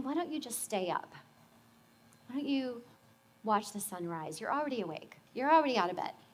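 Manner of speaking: little soft, hushed, quiet inner voice. Recalling an early morning, speaker voices what an inner voice said, little quiet voice. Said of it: "this little quiet voice saying".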